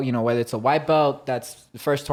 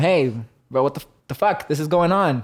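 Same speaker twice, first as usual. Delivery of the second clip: hollered, raised yelled protest, all at once; 3 semitones higher, 3 dB louder than usual. Retelling how he yelled at the referees during a match, retelling his yell at referee. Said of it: "until I yelled at them to tell them".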